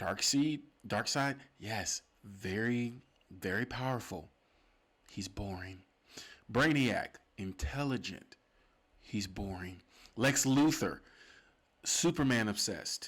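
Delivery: smooth, calm delivery, not yelling. A podcast host talking about villains, choosing his smooth voice over yelling. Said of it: "get into my smooth voice".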